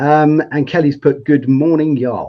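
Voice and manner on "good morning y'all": put-on American accent. Reading out a viewer's comment: imitating Kelly's accent. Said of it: "Hopefully I've got the accent right there".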